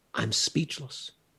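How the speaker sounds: mimicked strangled voice. Retelling what a man said after coming back into the room, in a strangled voice. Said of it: "he said in this very strangled voice".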